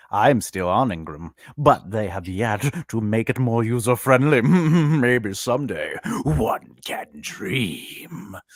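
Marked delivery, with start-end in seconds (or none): 4.4-8.3 very slow, drawling villain voice. Discussing book returns and distributors, switching into a villain voice. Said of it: "That's my villain voice".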